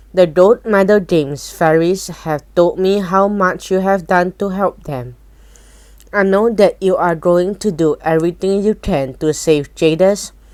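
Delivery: ordinary delivery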